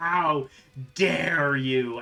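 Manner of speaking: loud, enraged, furious dragon-like beast scream. Voicing a cave dragon screaming back at a player: dragon screaming angrily. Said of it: "it screams back at you so angrily".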